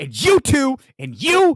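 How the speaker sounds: mock furious shouting. Imitating a man ranting at his crew: imitating someone yelling angrily. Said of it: "he's like".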